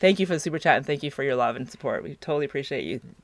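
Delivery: low, soft, moved and heartfelt emotional voice. Thanking a viewer for a super chat and prayers: getting emotional. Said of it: "I'm getting all emotional tonight".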